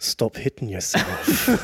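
soft, half-whispered, muttered under the breath. A player voices his character's words, meant for Boral to overhear, said under the breath. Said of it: "I'm going to say under my breath".

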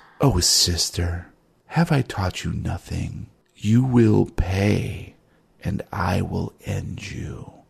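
ancient being's voice, rough and creaky. Voicing an ancient being that laughs in someone's mind: voice of an ancient being. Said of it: "a voice that says".

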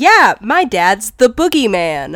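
ordinary delivery

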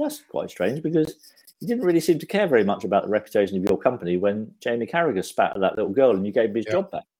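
ordinary talk, nothing marked

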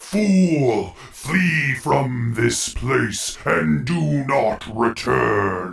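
deep, resonant, doom-laden voice, Fool drawn out. A voice answers someone who stumbled upon its place, in a deep resonant voice. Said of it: "a deep resonant voice".

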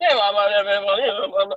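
drawn-out auctioneer patter, calling out. Speaker compares a man shouting about pennies to people at auctions, imitating an auctioneer. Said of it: "people go in the auctions and they're like".

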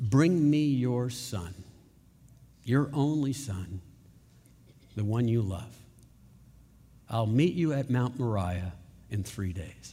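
gentle, hushed, calm, quiet voice. Quoting God's words to Abraham from Genesis: calm and quiet voice. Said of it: "with a calm and quiet voice".

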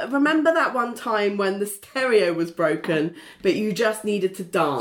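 ordinary talk

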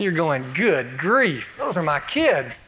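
plain

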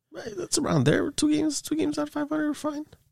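voice jumping up high. Answering a teasing remark about his team's record: voice jumping up high. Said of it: "Why do your voice go up like 5 octaves?".

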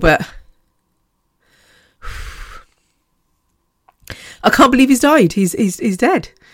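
audibly emotional. Speaker remembering a big-hearted man who has just died, getting emotional. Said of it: "I said I'm not going to get emotional".

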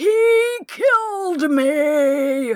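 high-pitched shriek with the word "me" drawn out. A voice coming out of Candy's mouth, screamed. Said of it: "The voice coming out of Candy's mouth screamed".

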